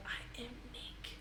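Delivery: put-on soft, whispered child's voice.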